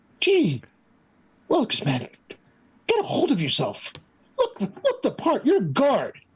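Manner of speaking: gruff, gravelly voice swinging upward, rising. Voicing a half-orc scolding a guard: gravelly voice rising in pitch. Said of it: "going from gravelly, even goes up a bit in pitch".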